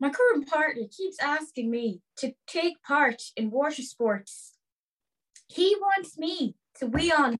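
put-on Irish accent. Speaker reads a letter addressed to Audrey aloud in an Irish accent. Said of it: "Your accent is sick".

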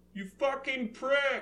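very high shout, sounding far off. A player's character runs to the cave's far end and shouts; shouting from far away. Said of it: "and I shout from far away".

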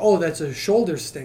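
ordinary delivery

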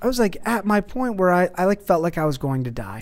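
ordinary talk

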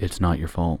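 very monotone, dead-level, toneless flat delivery. Joking about saying one phrase over and over for hours, very monotone. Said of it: "I totally see that very monotone".

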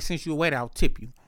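ordinary delivery

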